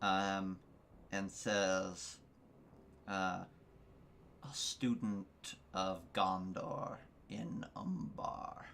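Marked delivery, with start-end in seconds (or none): 3.1-8.7 quieter rumbling voice. Narrating to a player as the voice in their head: rumbling voice. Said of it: "The voice in your head rumbles".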